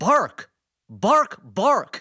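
put-on angry barked yells. Naming stars with distinctive voices, the speaker does Adam Driver as a mock-angry barking yell. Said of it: "Like kind of like an angry, yell".

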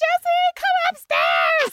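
very high screaming call.

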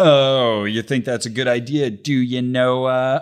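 acted eye-rolling sarcasm. Retelling a film's dialogue about building a boat: imitating sarcastic eye-rolling tone. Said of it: "just full of eye rolls".

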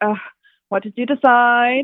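brusque, curt, host-style, put-on British accent. Speaker imitates staff from a show taking an order, in a curt British accent. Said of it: "they have to be like in a British accent".

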